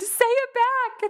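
very high, tearful, crying scream. Reenacting her reaction while rewatching a scene: reenacting a tearful scream. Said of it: "I screamed".

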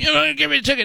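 acted-out, very high, shrieking scream. Recounting a woman screaming at another woman in a parking lot, retelling a scream. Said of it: "Screaming at her".

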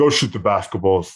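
bad, lousy Eastern accent, sounding fed up. Retelling what Coach Brown told the team, in a terrible Eastern accent. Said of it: "my terrible Eastern accent".

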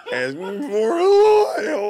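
high, loud, mock crying wail. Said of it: "They start crying".

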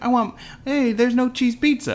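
put-on whining child voice, high.

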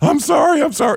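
very high, panicked, frantic voice. Retelling how the driver stood over him apologizing: imitating someone freaking out. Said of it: "he was freaking out".

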